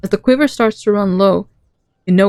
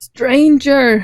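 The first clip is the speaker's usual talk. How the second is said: put-on trembling, quivering, high voice of very old man; 5 semitones higher than usual. Narrator voices a very old man who appears before the listeners, quivering old man's voice. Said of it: "he declares in a quivering voice".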